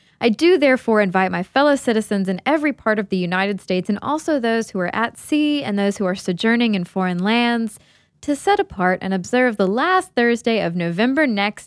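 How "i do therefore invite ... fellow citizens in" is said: usual speaking voice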